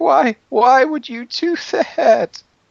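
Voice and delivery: very high-pitched, loud, bawling, sobbing wail. Narrating a tabletop fight, voicing a woman who was just hit, crying. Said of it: "she just starts crying, like really crying".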